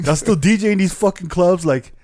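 mocking, sneering taunt. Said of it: "He's, like, laughing, like".

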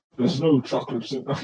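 put-on Scottish movie-star accent voice. Asked to turn the voice on for that moment of the story, use a Sean Connery voice. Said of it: "Could you turn on the Sean Connery voice".

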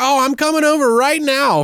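high-pitched, loud, worried voice. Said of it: "she's like".

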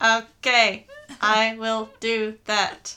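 very loud, flat robotic monotone. Acting out a reply to being told to sound less monotone, robotic monotone. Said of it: "stop being such a robotic moron".

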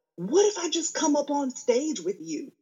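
very high-pitched yelled call-out. Retelling a heckler yelling during the show: imitating a woman yelling. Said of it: "she even yells out".

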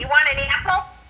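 upstate New York accent. Showing how people say it in the speaker's hometown: Syracuse accent. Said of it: "We say that".

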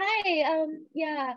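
put-on jittery, nervous, high-pitched kid-sounding voice. Explaining that nerves make strangers assume youth, acting it out: imitating own nervous high voice. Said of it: "my voice goes up like three octaves".

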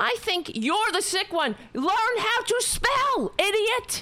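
high, raw screaming straight into the mic. Ranting at online commenters who can't spell, the speaker is screaming into the mic. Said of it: "I'm screaming into this mic here".

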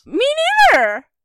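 very loud, very high-pitched, shrill outburst. Answering the other speaker about the send-off question: loud. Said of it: "That was loud".

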